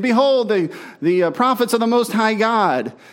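jeering, needling, mocking taunt, acted out. Retelling a bible story, quoting a possessed girl following a man, in a mocking tone. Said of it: "in a mocking tone".

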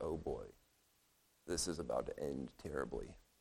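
quiet, sinking murmur.

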